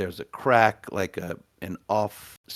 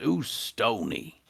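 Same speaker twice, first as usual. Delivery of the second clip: gruff, rough-edged, creaky fantasy dwarf voice; 3 semitones higher than usual. Storyteller voicing a dwarf whose halberd blocks the listener's path, dwarf voice. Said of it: "and the dwarf says".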